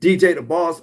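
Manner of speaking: loud, high-pitched yell, shouted straight out. Showing what happens when you yell at someone and say a name: shouted loudly. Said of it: "If I yell at you right now and I say".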